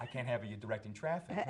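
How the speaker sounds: plain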